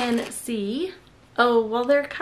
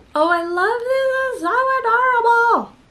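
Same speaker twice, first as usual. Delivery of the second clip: very high, shrill, deliberately annoying cutesy voice; 12 semitones higher, 6 dB louder than usual. Speaker showing something to the camera, annoying voice. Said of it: "In my annoying voice".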